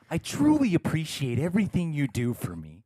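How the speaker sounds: grand, dramatic delivery with swooping pitch. Reading out a birthday message, the speaker says it to the listener in Andrew's intro tone. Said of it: "I'm gonna say it in your tone. Andrew's intro tone".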